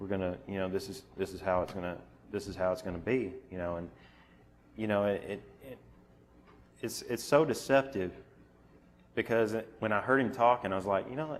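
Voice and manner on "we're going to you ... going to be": low, flat monotone drone. Imitating how a man he heard explained the process, in a low monotone voice. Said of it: "I'm gonna give it to you in a low monotone voice".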